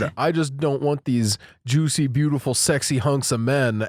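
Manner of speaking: ordinary talk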